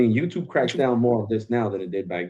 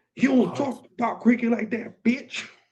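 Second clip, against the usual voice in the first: hostile, angry ranting, pitched very high; 13 semitones higher than usual. Retelling comments from fans who came after him: imitating an angry cricket fan. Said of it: "the cricket fandom came after me".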